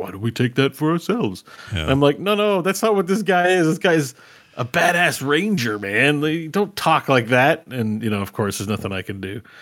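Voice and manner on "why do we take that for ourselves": cartoonish, silly, goofy villain voice. A speaker imitates how a ranger character was voiced, in a goofy evil voice. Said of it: "he's a little too like goofy evil".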